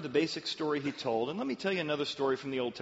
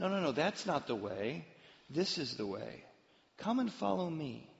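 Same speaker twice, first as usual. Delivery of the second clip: put-on helpful guiding tone, quieter; 3 dB quieter than usual. Retelling the Elisha story, voicing someone guiding the blinded army: retelling a helpful voice. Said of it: "It sounds like a helpful voice".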